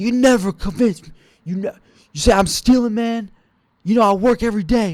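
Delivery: play-acted, defensive, high-pitched screamed yelling. Retelling what a man accused of stealing shouted: imitating a man yelling. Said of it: "this guy's yelling at me, screaming".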